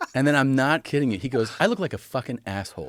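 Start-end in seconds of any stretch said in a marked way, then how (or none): 1.6-2.9 put-on bothered, fired-up, complaining tone. Retelling a child's complaint about not having a suit: imitating someone bothered and complaining. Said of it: "He's always bothered".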